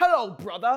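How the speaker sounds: put-on sudden drop into a British accent. Retelling a game plot, the speaker quotes Revolver Ocelot greeting Solid Snake in a British accent. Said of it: "starts speaking in a British accent".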